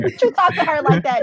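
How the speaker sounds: loud, high, indignant tone. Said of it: "I was like".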